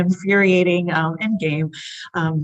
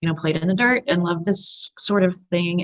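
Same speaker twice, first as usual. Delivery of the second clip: ordinary talk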